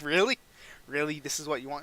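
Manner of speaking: plain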